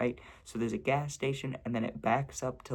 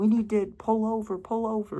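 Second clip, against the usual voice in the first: very high, frantic, panicked yelling; 10 semitones higher, 7 dB louder than usual. Retelling how the driver's girlfriend yelled after a possible dog hit; retelling a yell. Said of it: "his girlfriend was yelling".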